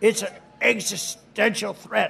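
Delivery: slow, drawn out, creaky lean on "existential". Repeating the quote in imitation of Biden: imitating Biden saying existential. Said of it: "He loves the word existential".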